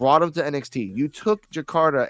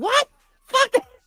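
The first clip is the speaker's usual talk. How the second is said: put-on angry voice, higher pitched. Retelling a girlfriend's reaction as she passed by: imitating a pissed-off girlfriend. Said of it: "all pissed off".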